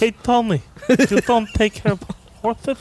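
put-on mobster voice with a lisp. Doing how a guy talks to tommy, mobster voice with a lisp. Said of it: "he's like a mob, guy with a lisp".

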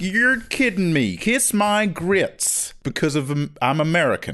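put-on American accent, very slow and drawn out. The speaker tries out a new voice, fake american accent. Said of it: "I'll do like an American accent".

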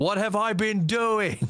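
shrill, very high-pitched yelling. Player voicing his character Hugs in the scene: yelling. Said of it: "Yeah, I yelled that".

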